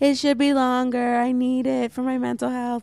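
put-on sarcastic voice. Acting out a planned listener complaint, imitating a sarcastic rant. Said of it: "a sarcastic keep it".

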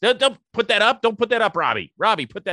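very high-pitched, loud shouting. Speaker stopping someone from putting something up, yelling. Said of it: "Sorry, I didn't mean to yell at Rob".

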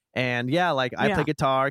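ordinary talk, nothing marked

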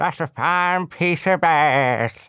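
gummy toothless speech, "ass" drawn out. Retelling the uncle talking to a woman after his dentures fell out, imitating Dave without dentures. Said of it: "like that".

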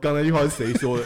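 mock stern, furious tone. Telling a joke, quoting the teacher turning round: imitating an angry teacher. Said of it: "老师马上转过头来生气的说".

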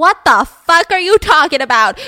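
loud, high-pitched, outraged disbelief.

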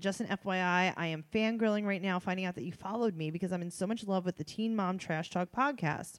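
ordinary talk

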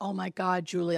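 excited voice. Retelling a dying man's voice heard in the head: imitating someone excited. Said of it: "he was, like, excited".

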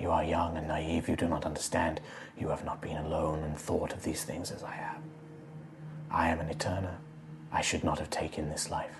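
grim, dark, barely audible whisper. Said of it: "this voice kind of go silent".

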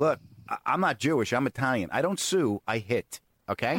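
normal talking voice

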